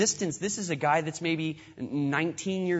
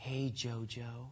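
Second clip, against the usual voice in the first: put-on very soft, low, hushed, sultry seductive voice; 6 semitones lower, 13 dB quieter than usual. Acting out how a woman greets JoJo, in a mock-seductive sexy voice. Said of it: "in her seductive, sexy voice".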